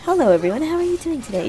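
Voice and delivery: high, quick, cheerful customer-service voice. Describing the voice used at work with customers: higher-pitched customer service voice. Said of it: "my customer service voice or my retail voice".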